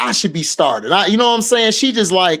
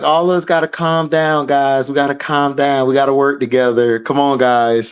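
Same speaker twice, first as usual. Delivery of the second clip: put-on calm, soothing voice, lower pitch; 5 semitones lower than usual. Imagining how a friend would calm the group down, as the voice of reason. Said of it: "Jay Spot gonna be like".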